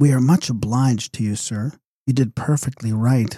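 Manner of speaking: kindly, gentle, mild tone. Reading a story aloud, a lady thanking the narrator: soft and gentle voice. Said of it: "in a soft and gentle voice".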